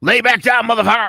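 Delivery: tough, high, loud barking voice.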